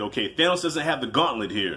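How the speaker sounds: ordinary talk, nothing marked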